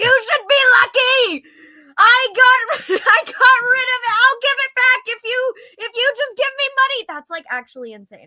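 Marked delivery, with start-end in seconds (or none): 0.0-7.0 very high, shrill, loud screaming. Describing the homeless man on the corner, imitating a screaming homeless man. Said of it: "the screaming homeless man who's like".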